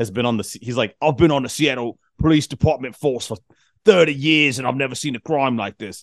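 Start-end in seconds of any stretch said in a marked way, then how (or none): 1.0-6.0 over-the-top, exaggerated fake British accent. Mocking a Seattle detective character's lines, in a fake British accent. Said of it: "he talks like that the whole fucking time".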